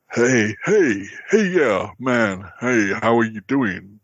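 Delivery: attempted American accent.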